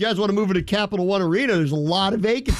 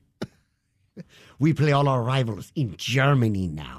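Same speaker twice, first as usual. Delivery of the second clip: badly done, put-on German movie-villain accent; 6 semitones lower than usual. Joking that teams now play all their rivals in Germany, bad German accent. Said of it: "Don't do that accent again".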